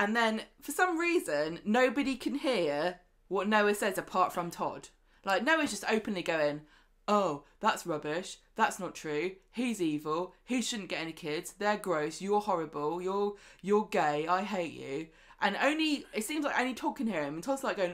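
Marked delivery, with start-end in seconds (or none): 7.1-15.1 mock sarcastic snark, lower. Retelling what a character says during a court scene: imitating sarcastic snark. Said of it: "So he's just being sarcastic".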